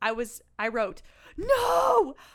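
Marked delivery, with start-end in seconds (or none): 1.4-2.1 screaming in horror, high and loud. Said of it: "I was screaming the whole time".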